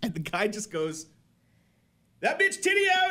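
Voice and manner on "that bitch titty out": distinct very high-pitched voice. Recalling the hot dog fight, imitate the guy in the back's distinct voice. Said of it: "that distinct voice".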